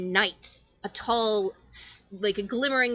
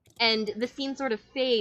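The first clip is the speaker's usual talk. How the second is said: ordinary delivery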